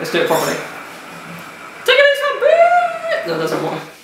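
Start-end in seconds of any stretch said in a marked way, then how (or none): 1.8-3.3 attempted very high pitch on peace. Trying to sign off the vlog like Logan Paul: attempted Logan Paul impression. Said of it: "I can't do it like Logan Paul".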